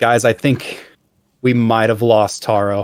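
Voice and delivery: ordinary talk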